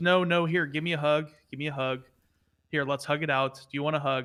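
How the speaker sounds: ordinary delivery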